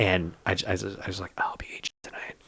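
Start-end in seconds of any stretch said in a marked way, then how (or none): 1.4-2.4 hushed whisper, close to the ear. Retelling what was whispered into a comic's ear: imitating a whisper. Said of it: "I was whispering in his ear".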